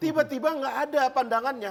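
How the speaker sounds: heated, high, hammering angry outburst.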